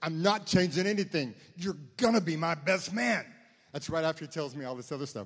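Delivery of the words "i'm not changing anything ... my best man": full-on, very loud, high-pitched yelling. Retelling the groom insisting he will still be best man, imitating someone yelling. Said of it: "this is during this time where he's yelling".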